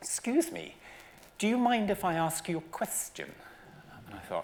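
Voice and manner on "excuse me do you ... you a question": put-on very high, swooping, grand cut-glass posh old lady voice. Retelling how a stranger approached with a question: imitating a posh elderly lady. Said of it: "very posh lady with very, very beautiful diction".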